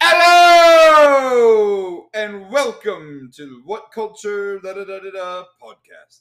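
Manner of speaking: mock shouted announcer voice. Recounting a podcast ad that plays out of nowhere, a loud imitated ad intro. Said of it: "that's loud".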